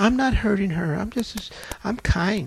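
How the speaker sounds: demure and sweet-natured voice. Retelling what a demon said when asked its name: imitating a sweet, demure voice. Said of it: "She sounded just as sweet and demure".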